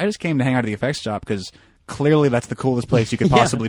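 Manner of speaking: ordinary talk, nothing marked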